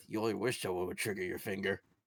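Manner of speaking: muttering under breath. Speaking in character as Aldari during a role-play, muttering under breath. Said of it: "would just butter under his breath".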